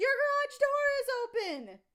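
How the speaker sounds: shrill, swooping, scolding yell. Retelling how a neighbor yelled across at the speaker: imitating a neighbor yelling. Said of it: "H O A Karen is yelling at me".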